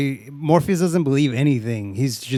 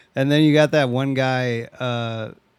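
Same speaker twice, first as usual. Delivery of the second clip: plain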